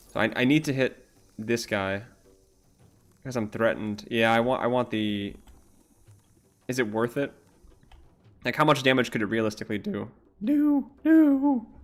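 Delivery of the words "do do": very high, breaking voice crack. Thinking aloud about a risky move, voice cracking. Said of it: "voice crack".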